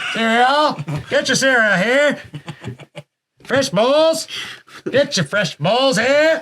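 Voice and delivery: very high, street-corner 1920s newsie voice. Pitching a cereal bar idea, the speaker plays a vendor dressed as a newsie, in a 1920s newsie voice. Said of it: "talks like a nineteen twenties guy".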